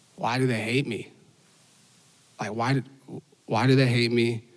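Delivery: put-on crying man's voice. Retelling what a young man said while crying: imitating someone crying. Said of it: "he starts crying. And he just goes".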